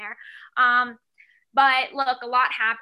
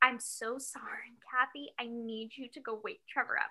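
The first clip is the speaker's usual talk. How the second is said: acted-out whisper, quieter; 11 dB quieter than usual. Retelling an early phone call asking someone's mom to wake him, re-enacting a whisper. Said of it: "did you whisper thinking that would make a difference".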